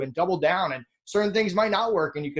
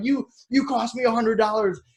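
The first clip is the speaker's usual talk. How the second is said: mock angry screaming and yelling, higher; 5 semitones higher than usual. Acting out how a meeting with a bookkeeper could have gone: imitating screaming and yelling. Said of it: "screaming and yelling".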